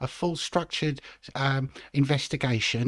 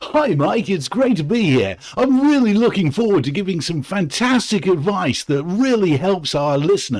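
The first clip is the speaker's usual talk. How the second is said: very positive, upbeat, higher and louder; 5 semitones higher, 9 dB louder than usual. Playing a money expert greeted on a radio show: very positive. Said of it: "you sound very positive".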